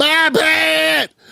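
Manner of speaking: ragged, shrill, rough, drawn-out top-of-the-lungs scream. Imitating him waking up from sleep: imitating a loud scream. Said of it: "scream to the top of his lungs".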